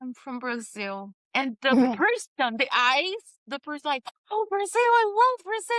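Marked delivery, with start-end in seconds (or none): 0.0-1.1 scared, very quiet, almost half-whispered voice. Retelling being asked where she is from, she almost half-whispers the answer. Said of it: "I almost whispered like".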